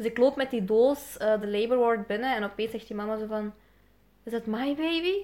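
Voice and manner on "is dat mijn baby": put-on shocked tone. Walking into the labor ward, the speaker retells the mother's shocked question. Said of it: "helemaal in shock".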